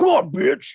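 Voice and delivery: menacing, scary horror-villain voice, taunting. Comparing the usual Freddy voice with the dropped-out one: Freddy Krueger voice. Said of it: "his Freddy voice".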